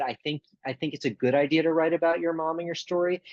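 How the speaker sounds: ordinary talk, nothing marked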